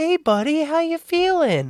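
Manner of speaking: very high, coddling, soothing, patronizing voice. Retelling how a man came back to check on the speaker, imitating talking to a high person. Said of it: "with the like how you talk to a high person voice".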